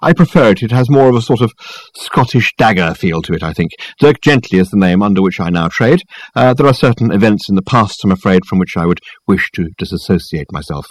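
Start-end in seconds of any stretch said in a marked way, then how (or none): none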